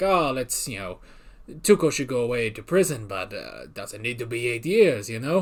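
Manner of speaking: terrible put-on character voice, low and hushed. Recapping a story, act out Hector's visit to Mike in a terrible Hector Salamanca impression. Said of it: "This is a terrible Hector impression".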